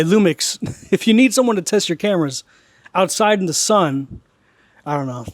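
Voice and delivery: heavy sarcasm, kept level. Addressing the camera brand with an offer to test cameras: sarcastic. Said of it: "That's very sarcastic".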